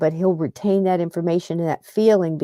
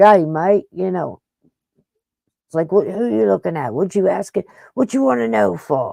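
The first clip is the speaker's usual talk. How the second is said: put-on rough dock-worker voice, a little rough, slower. Retelling how a man talked to people asking his name, rough dock-worker talk. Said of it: "He's talking like that".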